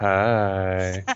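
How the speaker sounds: flirtatious. Showing how a line read flirtily would sound: flirty. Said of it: "I guess flirtily would be".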